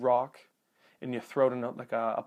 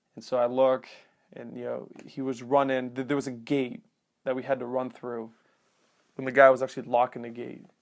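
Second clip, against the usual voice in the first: usual speaking voice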